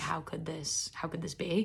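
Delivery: despairing, distraught, beside oneself, repeating in disbelief. Retelling hearing the concert can't be rescheduled: imitating own past distress. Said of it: "So I was beside myself".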